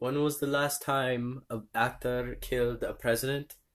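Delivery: put-on poorly done British accent, soft-spoken and hushed. Retell what Johnny Depp said to the crowd at a rally, in a shitty accent as Johnny Depp. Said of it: "Was that your British accent?".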